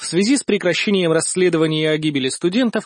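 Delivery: plain reading voice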